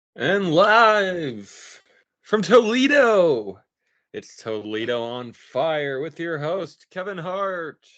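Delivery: loud, drawn-out broadcast TV announcer voice. Opening a pretend show from Toledo, introducing the host in a TV announcer voice. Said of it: "in a T V voice".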